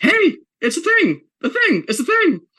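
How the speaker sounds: acted-out yapping cartoon dog shout, very high, swooping. Describing a cartoon scene, the speaker acts out the dog's line: retelling a dog's shout.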